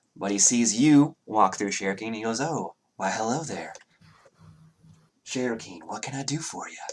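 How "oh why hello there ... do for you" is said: soft, hushed, eerily and unsettlingly over-polite voice. A game narrator voices Nemeth greeting Cherokee, in an unnervingly polite voice. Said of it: "in that unnervingly polite voice".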